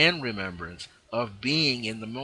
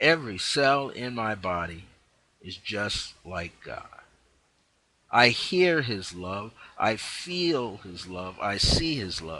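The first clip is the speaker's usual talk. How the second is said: unhurried, slow, meditative reading. Speaker reads the words to listeners to receive as a meditation, slow meditative reading. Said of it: "I'm not going to read it fast".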